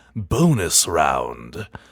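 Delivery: put-on swooping museum-curator announcing voice. Announcing the final bonus round of a quiz: curator voice. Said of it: "the curator voice".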